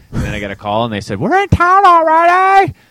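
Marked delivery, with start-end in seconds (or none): 1.1-2.7 high, loud mom voice. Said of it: "It's my mom voice".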